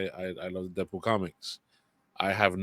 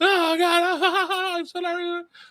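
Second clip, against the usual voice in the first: mock over-the-top excitement, higher and louder; 7 dB louder than usual. Imitating a guy reacting to a trailer on TikTok: over-the-top excited reacting. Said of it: "Totally over the top bullshit acting".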